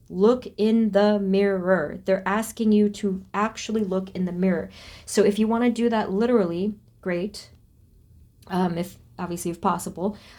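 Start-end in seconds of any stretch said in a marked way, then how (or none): none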